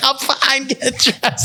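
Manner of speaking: high-pitched screaming. Retelling a fall off the bed: imitating own past screaming. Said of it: "And I'm screaming".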